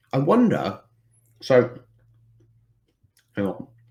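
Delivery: talking with mouth full. Speaker eating a peanut butter snack keeps talking, with mouth full. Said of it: "It's really hard to talk after eating it".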